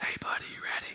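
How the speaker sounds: hushed, soft, breathy whispered talk. Retelling a hunting partner's words in the dark woods: imitating a whisper. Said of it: "You whisper".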